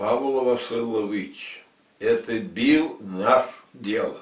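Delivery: put-on accent from the Caucasus. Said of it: "с большим кавказским акцентом ответил".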